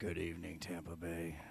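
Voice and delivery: dark, low, hushed and breathy voice. [name], challenged to sound like Batman, does a Batman voice. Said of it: "[name] talking like Batman".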